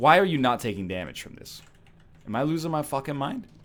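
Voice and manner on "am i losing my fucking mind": brassy, trumpet-like, pushed-out outburst. Reacting to enemies taking no damage: Joe Pesci voice.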